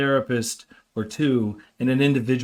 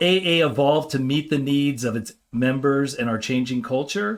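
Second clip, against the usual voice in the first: usual speaking voice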